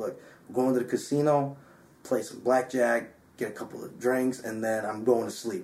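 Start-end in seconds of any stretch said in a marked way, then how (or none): none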